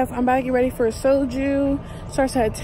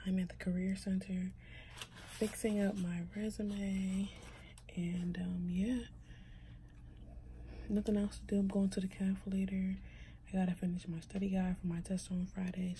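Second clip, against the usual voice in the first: whispering, much quieter; 5 semitones lower, 18 dB quieter than usual. Vlogging to viewers from a career center, whispering. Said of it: "Sorry if I'm whispering".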